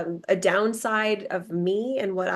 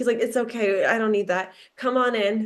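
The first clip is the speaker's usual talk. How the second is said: put-on tired, exhausted dad voice. Retelling meeting a dad at his door, imitating a tired, exhausted dad. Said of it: "this like very tired, exhausted dad".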